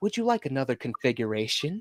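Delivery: otherworldly creature voice. Retelling a line a film character says to another character: Cenobite voice. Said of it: "in that whole Cenobite voice".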